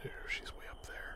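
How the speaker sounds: soft, unvoiced whisper.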